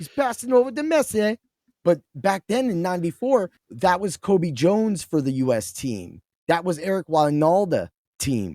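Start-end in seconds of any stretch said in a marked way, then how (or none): 0.0-1.4 clumsy fake British accent, commentator style, higher. Imitating a game's soccer announcer calling a play: bad British accent.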